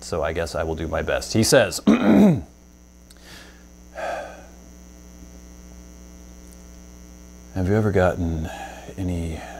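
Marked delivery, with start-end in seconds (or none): 1.9-9.4 slow, gloomy, downcast, depressed voice. Reading out a user's question at his request, in a depressed voice. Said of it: "He asked me to do a depressed voice".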